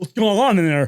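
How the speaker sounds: put-on loud drunk teen voice. Retelling talking to the bouncer at the back door: imitating a drunk adolescent. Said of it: "as a drunken adolescent".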